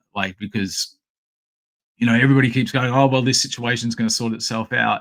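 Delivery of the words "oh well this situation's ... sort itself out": plain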